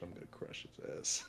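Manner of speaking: hushed, muttered whisper under the breath. Voicing a character muttering a threat about a rival: whispering under his breath. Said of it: "Miles just gonna whisper under his breath".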